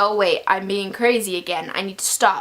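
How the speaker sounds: ordinary talk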